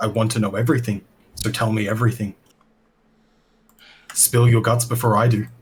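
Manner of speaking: forceful demanding voice. Questioning someone who claims to have no helpful information, with a raised voice. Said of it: "raise my voice".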